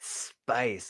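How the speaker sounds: put-on dramatic "spice". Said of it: "says the word spice so dramatically".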